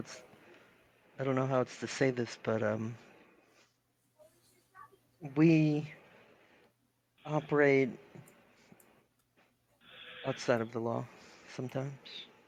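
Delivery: very hushed, quiet voice. A woman unsure whether someone is a good fit speaks in a very hushed voice. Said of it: "that in a very hushed voice".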